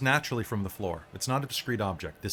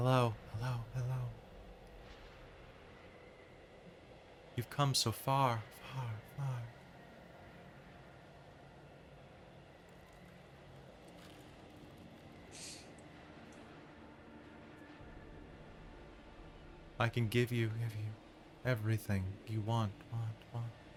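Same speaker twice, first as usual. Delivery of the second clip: very soft, breathy, otherworldly feminine whisper; 11 dB quieter than usual. Voicing a blue flame shaped like a woman as it speaks, ethereal voice. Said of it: "the blue flame is speaking with this very ethereal voice".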